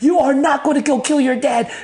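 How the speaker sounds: put-on furious, very high, loud yelling. Retelling how a friend went off at him, acting out the angry yell. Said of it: "He's like yelling at me like".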